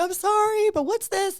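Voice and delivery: put-on crying voice. Retelling rushing an injured eagle back to the vet: imitating own past crying. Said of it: "crying, and I'm like".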